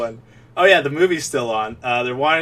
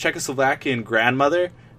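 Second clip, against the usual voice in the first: ordinary delivery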